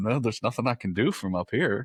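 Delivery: acted words broken up by laughter. Retelling what someone answered: imitating someone laughing while talking. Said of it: "just kind of laughing".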